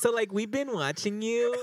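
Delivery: put-on very high Valley Girl accent. Imitating how they sound speaking English, with a Valley Girl accent. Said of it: "like the Valley Girl".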